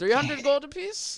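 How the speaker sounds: put-on dwarf accent. Voicing the dwarf shopkeeper again after finding the accent: dwarf shopkeeper accent. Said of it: "There it is".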